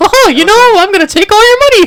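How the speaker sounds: pitched way up, loud. Joking about Disney taking money, in a Mickey Mouse voice. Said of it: "that's Mickey".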